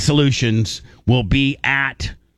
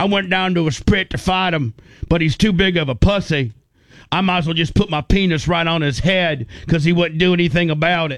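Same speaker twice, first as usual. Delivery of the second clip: put-on southern twang, pitched higher; 4 semitones higher than usual. Telling Gene what Bronson said about a job deal, in Bronson's southern twang. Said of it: "he's got that kind of that southern twang".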